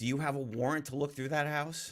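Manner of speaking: high screaming yell. Retelling what a little one screamed about a search: imitating someone screaming. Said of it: "He starts screaming".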